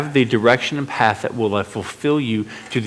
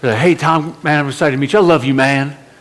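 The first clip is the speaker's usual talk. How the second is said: loud, friendly put-on southern drawl; 3 semitones higher, 5 dB louder than usual. Speaker quoting a friendly stranger's messages before they met: put-on southern accent. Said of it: "He has a southern accent".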